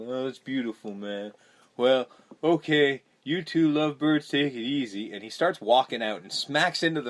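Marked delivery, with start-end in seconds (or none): 0.0-5.1 put-on stoner man-child voice, drawling. Retelling the movie scene as the character leaves: imitating a stoner man-child voice. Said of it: "he basically talks like this".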